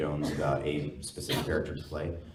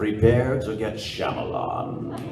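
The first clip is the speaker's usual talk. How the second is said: loud, pitched-up, wide-swinging put-on voice; 5 semitones higher, 5 dB louder than usual. A co-host requests it, and the speaker says the phrase: Amon voice. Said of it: "do the Amon voice and say the words".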